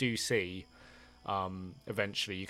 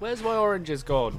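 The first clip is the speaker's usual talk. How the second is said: shrill, very high-pitched shout; 10 semitones higher, 9 dB louder than usual. Voicing someone shouting after the players as they ride off: shouting. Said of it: "you hear the shouting coming out".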